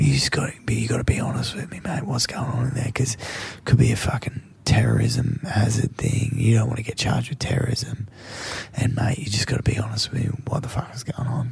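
put-on straight, serious voice. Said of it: "he put on, you know, the straight voice".

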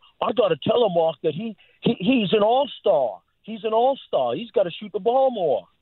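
put-on broad-voweled New England accent. Retelling what a head coach said to him: Brett Brown New England accent. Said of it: "Brett Brown telling me in his New England accent".

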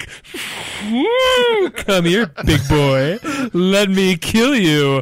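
very slow, high, swooping, lusty moose voice. Acting out a stereotypical hunter luring an animal, in a horny moose voice. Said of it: "Is that the horny moose voice?".

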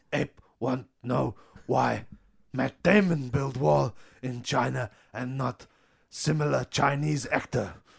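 put-on ape-like voice. Playing an ape slave who questions a wall builder: talking ape slave voice. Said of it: "the ape slaves start talking amongst each other".

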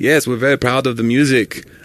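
put-on thick, heavy German accent. Imitating the performers who lip-synced, speaking about their album, thick European accent. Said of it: "They had very thick European accents".

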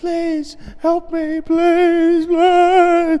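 very high, very slow, drawn-out sobbing. Retelling protesters at a night-time anti-vax march: imitating someone screaming and crying. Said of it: "screaming, crying".

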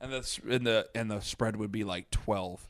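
usual speaking voice

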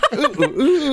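high, laughing squeal of ooh ooh ooh.

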